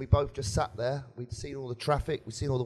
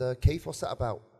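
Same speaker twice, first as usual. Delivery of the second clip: plain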